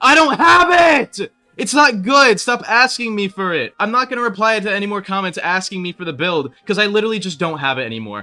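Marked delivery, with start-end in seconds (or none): 0.0-6.5 loud, slow, pitched-up yell, laying out each word. Speaker tells viewers who keep asking for an old build to stop, yelling. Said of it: "I'm sorry for yelling".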